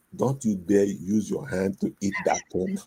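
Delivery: half-whispered under the breath, hushed. Retelling what a wife said at a wedding meal: imitating a half-whisper. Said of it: "My wife whispers to me".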